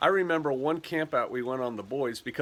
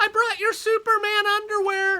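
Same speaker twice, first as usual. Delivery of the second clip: very high-pitched, loud hollering; 6 dB louder than usual. Retelling how a mom called to her son in front of other boys, hollering. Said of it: "She's hollering this".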